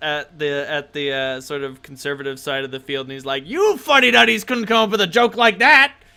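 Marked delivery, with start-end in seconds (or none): 3.5-5.9 put-on very high, very loud, grizzled old dwarf voice. Narrating a scene to the players and voicing a dwarf, grizzled old dwarf voice. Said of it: "This grizzled old dwarf".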